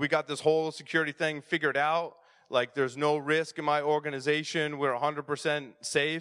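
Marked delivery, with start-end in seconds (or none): none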